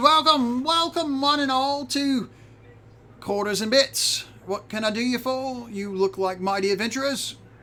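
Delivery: very high, thrilled, excited gnome voice. Game master voices Crank greeting the adventurers in his shop, as excited gnome shopkeeper Crank. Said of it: "I'm just a little gnome. / He jumps up and puts down the novel that he was reading. / to [name]".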